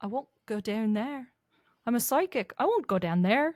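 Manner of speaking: put-on, tried-out Scottish accent. Actor asked to try the line in a Scottish accent, Scottish accent. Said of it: "Can you try to do this in a Scottish accent?".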